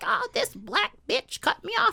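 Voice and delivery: put-on cranky, complaining, crotchety old lady voice.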